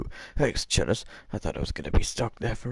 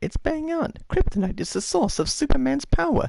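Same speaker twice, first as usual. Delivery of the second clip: very high-pitched squirrely voice. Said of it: "Okay, Squirrely".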